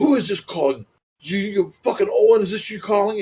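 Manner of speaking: attempted British accent. Telling how Davey answered silent calls to his room, doing an attempted Davey British accent. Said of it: "I can't do the British accent".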